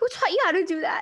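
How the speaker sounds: put-on very high, poorly done New Jersey accent. Retelling what Susan Messner asked, the woman who changed your life, in a bad New Jersey accent. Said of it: "She's got this New Jersey accent".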